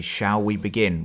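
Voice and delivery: ordinary talk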